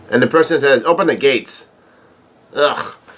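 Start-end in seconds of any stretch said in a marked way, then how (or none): none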